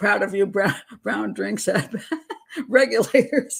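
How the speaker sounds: speaking through laughter. Reading a viewer's comment aloud, laughing while talking. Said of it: "I'm laughing at Sarah's comment here".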